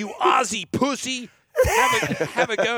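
put-on angry tirade. Retelling how a girl laid into Gordon after the ride: imitating someone yelling abuse. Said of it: "both barrels".

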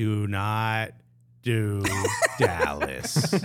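very slow and deliberate, each word spaced out. A podcast host addresses listeners who play episodes at 1.5 speed, very slowly. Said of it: "let me say this very slowly".

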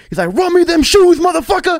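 play-acted shrill, very high, loud drawn-out scream. Retelling a man in a store yelling at his friend: retelling a yell. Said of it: "He yells at him".

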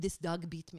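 bad put-on German accent. Retelling what a man said about the sore on his lip, in a bad German accent. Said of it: "he's German guy".

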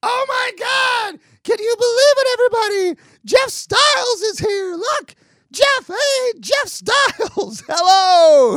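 very high-pitched, shrill, drawn-out screaming. Retelling someone shouting to a crowd and pointing at a man: retelling a high-pitched scream. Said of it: "screaming in a really high-pitched voice".

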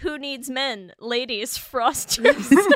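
loud, giggling, words breaking into laughter. Quoting a commercial line to the others, laughing while talking. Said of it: "I can't even get it out".

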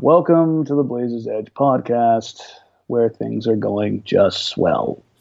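toned-down, dialed-down voice. Co-host showing the host how to open the podcast, toned-down delivery. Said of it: "I'm going to need you to tone that down".

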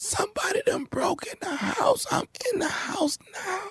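high, hushed, frightened whisper. Answering why the caller whispers during a prank call: whispering as a prank character. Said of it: "why in the hell you whispering".

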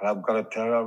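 toothless-sounding gangster voice, as if missing teeth. Doing a quick impression of an actor's line: Al Pacino impression. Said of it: "Do a Al Pacino".

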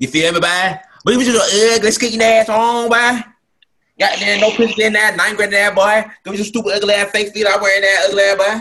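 put-on very high, loud, hard-hitting country accent. Doing an impression that the others call spot-on: DC Young Fly impression. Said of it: "That's a pretty spot-on impression".

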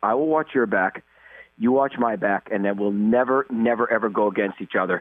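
plain

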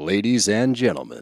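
put-on promo announcer-style delivery. Launching into a promo for the Bravo Bros; promo announcer voice. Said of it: "What are you doing?".

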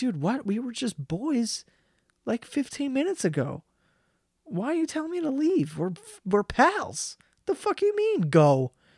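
high, swooping, baffled dog voice. Retelling the Air Bud scene, voicing the dog: imitating a confused dog. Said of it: "And the dog's so confused".

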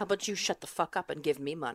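low, playfully menacing voice. Talking to a phone about winning the lottery: mock threatening the phone. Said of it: "like I'm threatening it right now".

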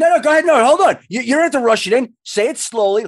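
loud, high-pitched, teasing, hyped-up delivery.

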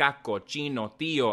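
ordinary delivery

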